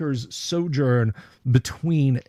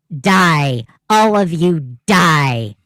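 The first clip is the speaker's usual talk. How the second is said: very loud, piercing, shrill, menacing, sinister voice; 4 semitones higher, 9 dB louder than usual. Narrating a scene to players, the speaker voices a sinister, shrill voice. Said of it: "this sinister, uh, shrill voice".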